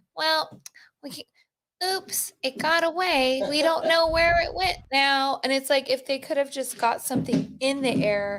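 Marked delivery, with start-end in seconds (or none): 0.2-5.4 put-on old lady voice, high and slow. Mimicking what everybody else says about it, in an old lady voice. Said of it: "that sounds like an old lady".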